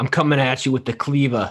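put-on loud yell in a Brooklyn accent. Joking about Gordon Ramsay's knives, speaker tries voicing him: Brooklyn-accented Gordon Ramsay impression. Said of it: "He's not from Brooklyn".

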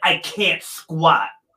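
loud, snotty, acted-out mouthy delivery. Retelling a woman's first day of squats, the speaker mimics her mock-snotty reply. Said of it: "she got really snotty and was like".

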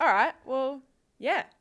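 disappointed. Just told the exclusive content comes without nudes, answering disappointed. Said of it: "Your voice sounded so disappointed".

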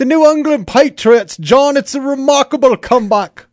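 bad, high put-on British commentator accent. Speaking to John about the New England Patriots in a bad British accent. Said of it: "You have the worst British accent I've ever heard".

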